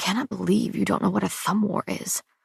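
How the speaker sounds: muttering under the breath. Reading a story aloud, voicing him teaching a game: muttering under his breath. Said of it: "muttering under his breath".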